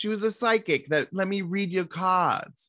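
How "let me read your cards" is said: put-on, over-the-top, showy New York accent, played extra. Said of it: "she's just kinda talking like this".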